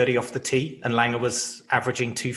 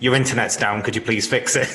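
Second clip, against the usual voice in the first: mock deadpan tone, delivered louder; 5 dB louder than usual. Imagining how the other speaker would ask him to fix the internet: imitating a deadpan delivery.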